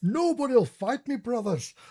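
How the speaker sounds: very loud, very high, thick exaggerated Scottish accent. A player character wheels a horse around in a tabletop game: exaggerated Scottish accent. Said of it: "in the most Scottish accent".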